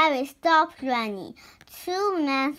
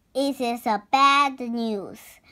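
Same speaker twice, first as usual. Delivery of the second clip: ordinary delivery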